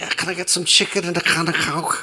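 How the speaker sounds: put-on Liverpool accent. Mimicking how people from Liverpool talk, imitating a Liverpool accent. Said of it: "for how people from Liverpool".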